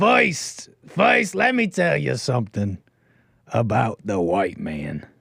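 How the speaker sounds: scary put-on cartoon voice. Practicing a voice he is working on, doing an Uncle Ruckus impression. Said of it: "That voice, I'm scared".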